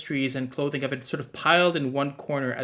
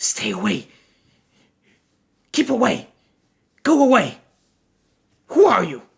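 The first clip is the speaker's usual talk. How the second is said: rasping, scratchy voice, high and loud; 8 semitones higher, 8 dB louder than usual. Narrating a game, voicing a woman who notices the players' lantern: raspy voice. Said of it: "in a sort of raspy voice says".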